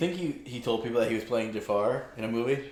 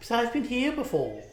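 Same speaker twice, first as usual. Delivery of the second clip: put-on British accent, pitched way up; 12 semitones higher than usual. Commenting on a movie, do an impression of a movie actor doing british. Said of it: "That's my impression of him in this movie".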